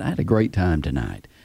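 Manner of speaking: earnest, sincere, genuine delivery. Showing how to thank a date after a first date: sincere. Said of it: "you wanna be sincere when you say that".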